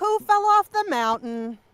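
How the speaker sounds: very high, very loud punchline delivery. Echoing another player's question like a sitcom stinger: sitcom stinger delivery. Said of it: "Just a sitcom stinger music, like".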